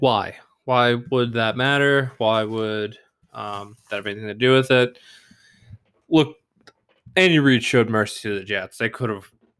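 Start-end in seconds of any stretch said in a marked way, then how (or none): none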